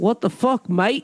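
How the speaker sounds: fake British accent slipping into Australian. Saying what your caption will be, in a bad british accent. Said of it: "was that a British accent".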